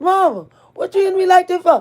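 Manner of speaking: high, fast pleading holler.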